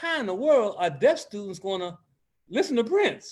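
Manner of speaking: usual speaking voice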